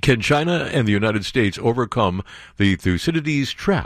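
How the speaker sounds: ordinary delivery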